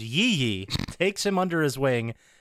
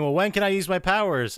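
put-on whining; 5 semitones higher than usual. Retelling a game scene where Shaq asks about his powers: imitating whining. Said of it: "Shaq's whining and saying".

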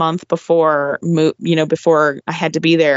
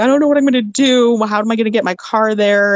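high, tearful, words choked out while crying; 5 semitones higher than usual. Retelling being upset at work one day: retelling own crying.

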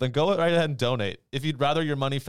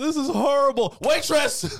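very high, loud, blubbering fake cry; 14 semitones higher, 5 dB louder than usual. Picturing oneself at the expensive dinner, crying into a steak: mock crying. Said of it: "just crying".

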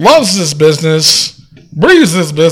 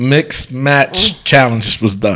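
deliberate, slow, drawn-out phrasing in a low voice; 4 semitones lower, 3 dB quieter than usual. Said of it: "I said it slow".

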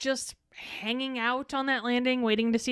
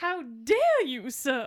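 put-on affronted, scandalized Southern belle voice, Southern accent. Mocking how a character covers himself in a scene: mock-scandalized Southern belle. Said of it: "like he's a fucking scandalized Southern belle".

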